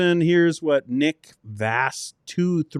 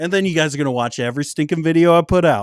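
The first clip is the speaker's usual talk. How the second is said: ordinary talk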